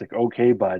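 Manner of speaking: snide, brushing-off, dismissive sarcasm. Showing the phrase that is killing them: sarcastic okay, bud. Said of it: "Like just that sarcastic".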